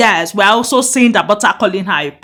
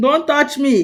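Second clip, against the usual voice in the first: put-on light, jokey, pitched-up mild shout; 5 semitones higher than usual. Retelling a reality show scene where one cast member shouted: imitating someone shouting. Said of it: "Dadem was shouting".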